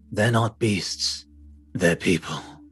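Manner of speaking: put-on husky voice with a slight Scandinavian accent tinge. Doing a character impression from Bloodborne: Djura the Hunter impression. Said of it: "the Jura the Hunter impression".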